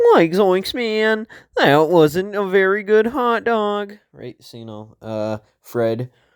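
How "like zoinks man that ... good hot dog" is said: very high, loud, cartoonish voice. Running through Scooby-Doo cartoon characters, doing a Shaggy voice. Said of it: "then we got Shaggy".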